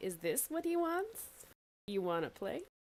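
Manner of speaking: put-on childlike, childish little-kid play voice. In a tabletop game, a character offers a doll to a creature: childish voice. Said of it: "she kind of turns into it like a childish voice".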